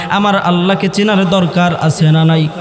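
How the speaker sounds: ordinary delivery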